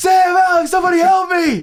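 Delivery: mock very high-pitched, terrified, panicked screaming. Speaker retells calling his brothers when he was scared as a kid, retelling a scream for help. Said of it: "I'm screaming".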